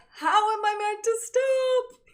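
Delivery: shrill, booming, high, slow, drawn-out shout. Retelling shouting back from a moving truck: retelling own yell. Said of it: "And I yell back".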